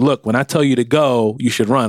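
ordinary talk, nothing marked

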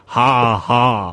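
loud, put-on mocking laugh. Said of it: "all in caps lock".

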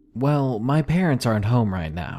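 ordinary delivery, nothing marked

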